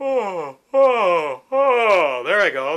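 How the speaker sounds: speaking through a yawn. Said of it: "pretend like you're going to do a yawn, like this".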